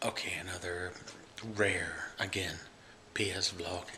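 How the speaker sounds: hushed whisper. A parent vlogging at night while mommy's already in bed, whispering. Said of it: "I'm whispering because mommy's already in bed".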